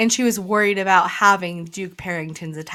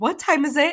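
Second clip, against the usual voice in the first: put-on panicky tone; 8 semitones higher than usual. Retelling a character waking up late: imitating someone panicking. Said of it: "almost wakes in a panic".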